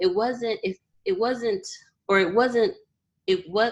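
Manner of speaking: high-pitched stammer with stumbling false starts. Speaker talking about growing up in a single-parent household, stuttering. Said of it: "I'm stuttering".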